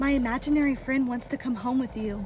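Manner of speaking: ordinary talk, nothing marked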